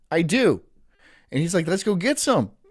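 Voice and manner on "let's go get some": put-on Mexican-sounding accent, pitched up. Retelling what a German friend said: imitating German friend with Mexican accent. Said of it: "I make him sound like a Mexican".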